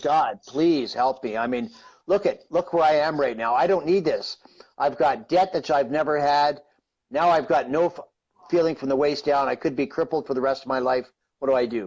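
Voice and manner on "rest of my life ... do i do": ordinary talk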